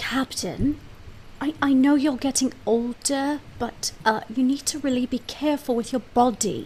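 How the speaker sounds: slow, hushed, discreet whispered aside. Playing a crew member, quietly warning the captain about their body: whispering to the captain. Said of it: "I'm gonna whisper to the captain".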